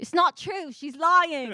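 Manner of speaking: put-on high drunken yell. Retelling a heckle from a drunk guy: imitating a drunk heckler yelling. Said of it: "this drunk guy yelled out".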